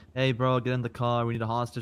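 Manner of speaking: put-on playful, mock menacing voice. Asking how the hostage-taker sounded, acting the playful version. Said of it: "playfully taking you hostage?".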